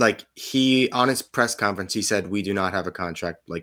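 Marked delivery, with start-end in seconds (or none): 2.3-3.5 put-on deadpan, no irony, much quieter. Quoting a man at his press conference, retelling a deadpan line. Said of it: "deadpan, no tongue in cheek".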